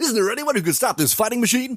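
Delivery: very high, high-pitched fighting game announcer voice. Giving an example of games that announce names, fighting game announcer voice. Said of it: "an announcer in a fighting game".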